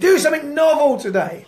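dry, pointed, sarcastic tone. Retelling words spoken to the speaker: imitating a sarcastic tone. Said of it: "almost like a sarcasm in his voice".

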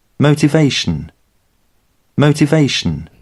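British accent, British pronunciation. Speaker modeling a word for students to repeat; British pronunciation. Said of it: "이 단어 한번 우리 영국식 발음으로 시작".

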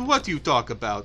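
thick Russian accent with wide pitch range.

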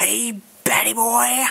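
high-pitched, loud taunting. Doing a bit for the camera: Mark Hamill Joker voice. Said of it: "How about some Mark Hamill?".

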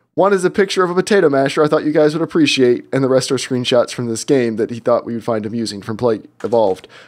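normal talking voice

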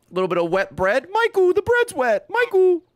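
very high, loud voice swooping around. Doing an impression while playing as a goose: Gavin impression. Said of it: "Do you like my Gavin impression?".

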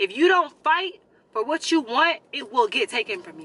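passionate, impassioned, fervent preacher's urging. Addressing listeners about god's love: yelling passionately. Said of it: "I didn't mean to yell at y'all".

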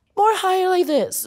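voice pushed very high. Speaker shows how his voice sounded back in high school, high-pitched voice. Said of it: "(Austin's voice high-pitched)".

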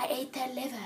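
creepy, low, very hushed delivery. Listing scary movie characters and quoting one, creepy Hannibal Lecter voice. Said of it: "with the creepy voice like".

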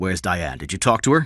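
plain reading voice

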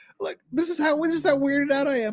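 high-pitched voice. Speaker shows how weirded out they are, voice gone up high. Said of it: "My voice has gone up like an octave".

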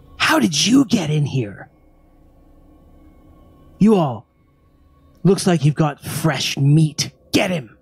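raspy crying voice. A game master voicing Gemma calling out as an orc appears: raspy cry. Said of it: "Gemma's voice raspily cry out".

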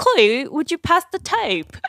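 put-on British accent. Recounting what they say to someone else, in a British accent. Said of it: "I do that with Chloe too".

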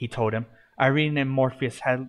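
ordinary delivery

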